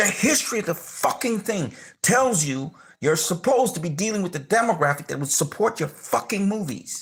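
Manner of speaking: getting worked up, heated, angry ranting. Complaining about a film company's choices, getting angry. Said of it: "I'm sorry if I'm, I'm getting angry".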